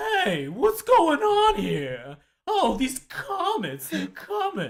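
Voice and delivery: very high, loud, goofy seventies-style voice. Discussing the pilot episode's wizard, doing a goofy seventies Zagras voice. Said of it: "he does have a very kind of seventies goofy voice".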